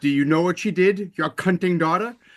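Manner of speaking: heavyset British man voice. Retelling a film scene where a daughter speaks as a director, fat british man's voice. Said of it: "like a fat British man's voice".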